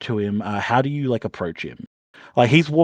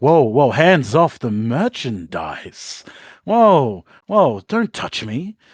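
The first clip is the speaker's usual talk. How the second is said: slightly raised voice, slow and deliberate. Game master voicing a character stepping back, louder voice to draw attention. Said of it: "saying it in a bit of a louder voice".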